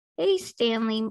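ordinary talk

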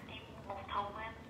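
soft, gentle, low-pitched murmur.

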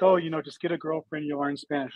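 normal talking voice

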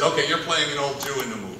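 plain

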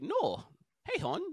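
put-on whispered, breathy, wild Minnesota accent. Describing how a show's characters talk, in a Minnesota accent. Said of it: "they got some wild Minnesota accents".

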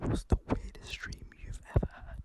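whispering. Asking the others a question: whispering. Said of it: "Why is he whispering".

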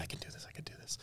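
frantic, panicky whispered self-talk. Retelling a daughter talking herself into standing up: imitating someone panicking. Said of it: "just panicking, just talking herself into it".

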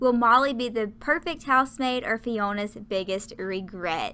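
ordinary talk

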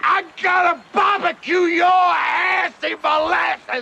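slow, high-pitched, furious yelling.

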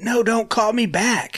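put-on loud, high, stretched-out, drawn-out yell. Retelling how a caller answered on the phone: imitating someone yelling. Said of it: "he yells like".

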